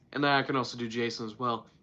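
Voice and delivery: ordinary talk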